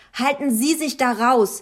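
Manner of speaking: furious, abrupt, angry snapped retort. The narrator snaps back at a boy's mother: snapping angrily. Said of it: "blaffte ich sie wütend an".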